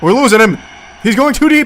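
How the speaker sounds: high, loud, frantic, panicked shouting.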